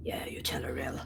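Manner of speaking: whispered.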